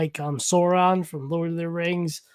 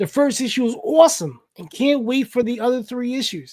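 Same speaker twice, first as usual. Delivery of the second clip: put-on New Jersey accent, pitched up; 6 semitones higher than usual. Reading someone's message aloud to them, giving it a Jersey accent. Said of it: "I'm just giving you a Jersey accent".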